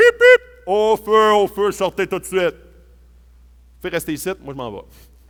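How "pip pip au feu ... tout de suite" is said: big, loud, commanding firefighter voice. Describing a firefighter arriving with his megaphone, doing his big firefighter voice. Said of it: "avec une grosse voix comme ça".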